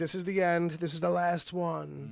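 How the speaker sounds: ordinary delivery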